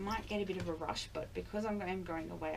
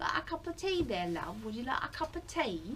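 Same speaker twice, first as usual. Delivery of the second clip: put-on British accent, pitched up; 6 semitones higher, 4 dB louder than usual. Showing a British accent while offering a cup of tea. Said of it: "I can do a British accent".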